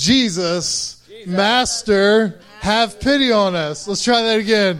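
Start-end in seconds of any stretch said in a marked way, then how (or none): 0.0-3.9 loud, drawn-out call as if across a distance. Leading a group acting out lepers calling to jesus, calling out loudly. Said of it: "we're going to call out in a loud voice".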